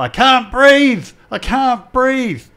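high, slow, desperate scream at the top of voice.

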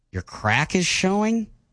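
disappointed, let-down tone. Asked to say a line in a disappointed tone, as an acting exercise. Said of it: "say in a little disappointing tone".

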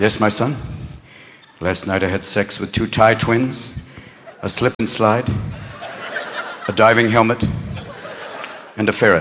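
hushed, quiet tone.

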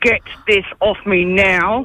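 low voice through gritted teeth, jaw clenched. Speaker retells what they told their husband, through gritted teeth. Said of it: "proper through gritted teeth going".

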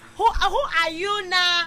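high, slow mock Nigerian accent.

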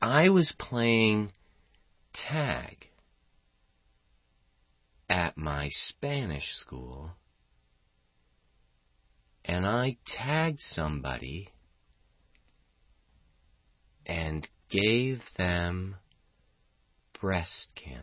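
grave, completely solemn, dead serious delivery. Retelling what Henry said to them: imitating Henry's very serious tone. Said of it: "he said it in that tone of voice, too, really seriously".

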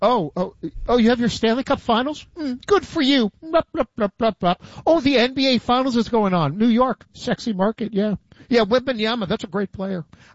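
smug villainous voice. Talking about sports leagues, voicing the NFL's attitude: Dr. Evil impression. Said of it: "I don't know why I'm doing my Dr. Evil impersonation".

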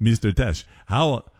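bad fake Swedish accent. Retelling a man from Sweden coming up and asking a question, terrible Swedish accent. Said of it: "It's a terrible Swedish accent".

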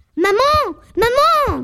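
calling loudly. Running in calling for her mother, yelling. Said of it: "Therese, stop yelling".

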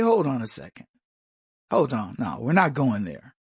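calm and even. Describing how they confront someone, the speaker acts out what they'd say, very calm. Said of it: "I'm going to be very calm".

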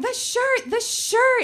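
acted, very high, stretched-out, drawn-out shout. Retelling the moment over a shirt in the wash, the speaker re-enacts: retelling a yell. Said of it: "I start yelling".

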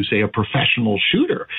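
ordinary talk, nothing marked

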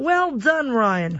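put-on high-pitched Australian accent. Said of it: "craft my Australian accent".

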